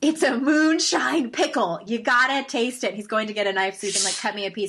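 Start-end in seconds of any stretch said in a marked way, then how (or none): 0.0-2.9 put-on drunken voice, loud, slow stage whisper. Retelling a drunk man offering a moonshine pickle, imitating a drunk loud whisper. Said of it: "he's kind of whispering it. But he's drunk, so he's not whispering".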